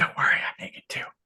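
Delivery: soft, breathy whisper.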